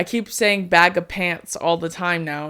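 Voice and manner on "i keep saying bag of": plain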